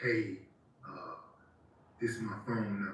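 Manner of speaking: secretive, soft, hushed half-whisper. Acting out a woman secretly telling a man her number: imitating a half-whisper. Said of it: "whispering in your ear her phone number".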